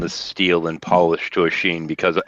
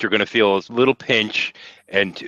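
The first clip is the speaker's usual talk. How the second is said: ordinary talk, nothing marked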